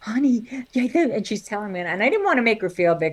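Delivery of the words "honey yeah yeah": mock whisper, higher. Retelling a sister's phone call from a bathroom: imitating a sister whispering. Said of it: "calls me from the bathroom whispering".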